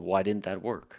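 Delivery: put-on shouting. Retelling what the boss shouts after an attack fails: imitating a shout. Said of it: "he's shouting".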